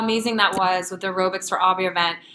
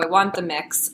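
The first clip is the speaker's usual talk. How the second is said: usual speaking voice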